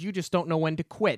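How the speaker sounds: plain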